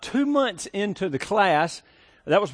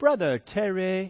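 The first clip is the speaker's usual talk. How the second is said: very slow, drawn-out speech, every word dragged. Retelling how a man from Mississippi introduced you: imitating his really slow talk. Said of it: "just like real slow".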